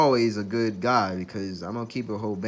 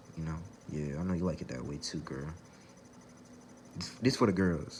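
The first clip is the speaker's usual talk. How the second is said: soft, breathy, seductive whispered sweet-talk; 4 semitones lower, 9 dB quieter than usual. A podcast host addresses the women listening, soft voice. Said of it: "let me hit you with the soft voice".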